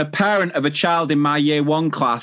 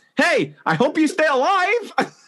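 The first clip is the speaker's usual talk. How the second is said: very high, sing-song, swooping, botched put-on Dutch accent; 12 semitones higher than usual. Trying to show a Borat voice after being told it creeps in: failed Borat impression. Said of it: "well that wasn't really Borat".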